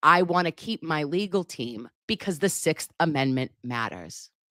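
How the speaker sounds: usual speaking voice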